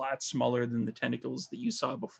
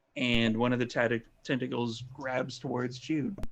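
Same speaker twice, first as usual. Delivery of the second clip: usual speaking voice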